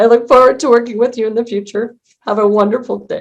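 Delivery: crying, voice breaking. Closing a session and thanking those who joined, while crying, voice breaking. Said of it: "I'm crying".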